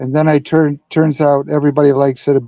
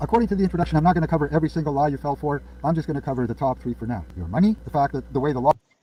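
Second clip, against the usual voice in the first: very fast, rushed, rattled-off delivery; 10 dB quieter than usual. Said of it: "that's fast".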